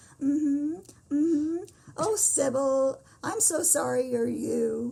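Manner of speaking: put-on sincere sympathy. Retelling a favorite movie scene, imitating sincere sympathy. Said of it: "she says it with such sincerity".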